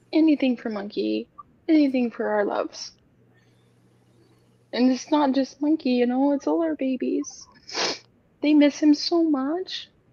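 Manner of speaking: talking through tears, tearful. Talking to someone called baby about the one they miss, crying. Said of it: "I'm crying".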